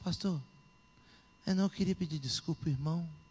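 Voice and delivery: quiet, hushed whisper. Retelling a late-night phone apology to the pastor: imitating own hushed whisper. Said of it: "Tô até falando baixinho".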